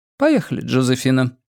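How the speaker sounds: ordinary delivery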